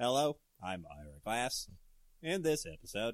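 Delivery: mechanical, robotic radio host voice. Joking about a robot podcast host, doing a Robo Ira Glass impression. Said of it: "you get Robo Ira Glass".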